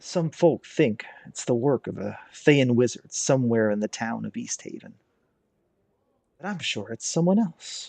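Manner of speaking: secretive, soft, hushed murmur under the breath. A woman leans in closer to join the conversation, hushed voice. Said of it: "with a hushed voice says".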